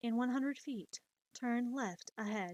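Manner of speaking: level, robotic sat-nav announcer voice, put-on. Giving friends directions the way they warned them, in a robotic GPS voice. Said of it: "Are you sure you're not AI or a robot?".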